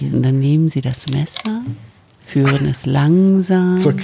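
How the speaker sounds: put-on calm, soothing yoga-instructor voice. Speaker shows how to tell it like the yoga ladies: calm yoga-instructor voice. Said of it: "in diesem Ton erzählen, wie die Yoga-Damen. Ne? Also ganz ruhig".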